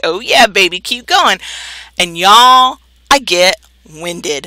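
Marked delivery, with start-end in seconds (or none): none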